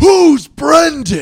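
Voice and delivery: all-out high, very loud screaming. Telling a story, acting out the boyfriend finding the note in the locker: retelling a scream. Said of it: "he just screams".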